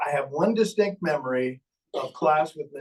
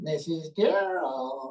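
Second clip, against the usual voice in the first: thrown ventriloquist voice, sounding from across the room; 2 semitones higher than usual. Retelling calling the teacher during class: imitating throwing his voice. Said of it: "How could I throw my voice?".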